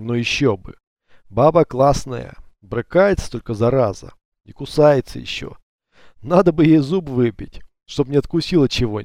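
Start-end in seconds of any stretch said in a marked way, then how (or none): none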